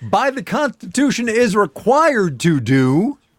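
high, loud yelling. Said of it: "was I yelling?".

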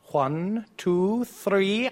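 high cartoon owl voice. A quiz contestant answers the host's follow-up question: Tootsie Pop owl voice. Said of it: "You even did the accent of vowel".

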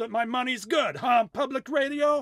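poor put-on Cuban accent. Radio hosts sign off, and one jokes in a bad Cuban accent. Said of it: "my Cuban accent is bad".

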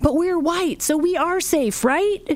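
mock, very high-pitched, loud carrying voice. Parent retells their child's remark, retelling a loud remark. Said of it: "and very loudly said".

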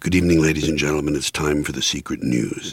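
whispered, hushed news announcer voice. Describing a sketch aloud and voicing its announcer, whispering news announcer. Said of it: "the announcer whispering saying".

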